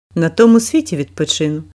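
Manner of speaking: plain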